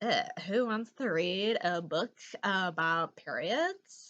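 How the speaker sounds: put-on Southern California girl voice. Recommending a book, voicing listeners' doubts in a Southern California girl voice. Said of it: "I went like a Southern California girl".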